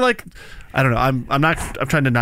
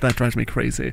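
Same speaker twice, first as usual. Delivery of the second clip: ordinary delivery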